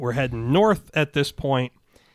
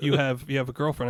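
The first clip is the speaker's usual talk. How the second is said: ordinary delivery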